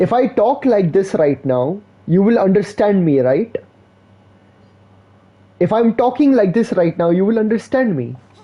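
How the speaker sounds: English spoken with an Indian accent. Showing how English sounds when spoken with an accent: Indian accent in English. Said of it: "That's the Indian accent with English".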